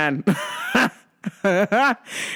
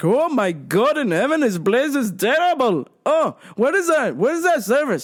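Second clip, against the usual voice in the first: mock complaining, higher; 4 semitones higher than usual. Retelling how dad complained at the restaurant: imitating dad complaining. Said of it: "He's like".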